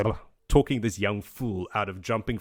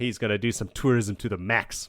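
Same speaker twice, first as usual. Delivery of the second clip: plain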